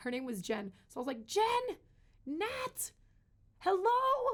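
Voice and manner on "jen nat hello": play-acted, very high-pitched shout. Retelling calling out after stepping on glass: retelling a shout. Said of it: "And I start shouting".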